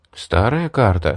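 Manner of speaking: ordinary delivery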